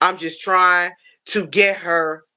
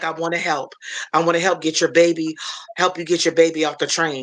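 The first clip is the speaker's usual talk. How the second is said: mock calm speech. A mother retells what a man on the train said, imitating calm talk. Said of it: "So he talked real calm".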